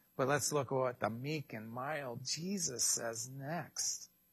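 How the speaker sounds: tongue-in-cheek, sarcastic delivery. Commenting on a scripture passage to listeners: sarcastic. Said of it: "Sorry for the sarcasm".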